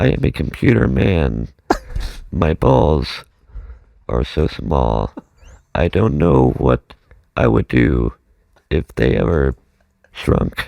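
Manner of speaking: very low, mechanical computer-man robot voice. Performing after being asked for a robot voice: robot voice. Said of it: "can you please do the robot voice".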